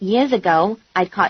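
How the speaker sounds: ordinary delivery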